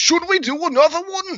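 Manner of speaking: put-on English accent, very high, shrill, very loud. Quoting what he said, in a put-on English accent. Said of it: "Like some kind of English accent or something".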